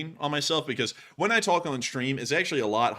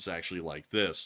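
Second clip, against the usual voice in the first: flat monotone voice, lower and quieter; 8 semitones lower, 7 dB quieter than usual. Showing how the voice sounds off air when talking normally: flat monotone voice. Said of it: "What do I talk like normally".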